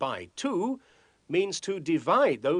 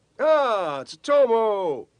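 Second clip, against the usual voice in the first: yelling loudly, higher and louder; 7 semitones higher, 7 dB louder than usual. Calling out to tsutomu while working on a math challenge: shouting. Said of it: "Why are you shouting today?".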